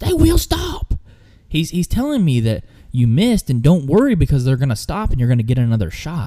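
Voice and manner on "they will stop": high, frustrated, mock yelling. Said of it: "he's yelling this".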